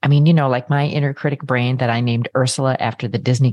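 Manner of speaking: plain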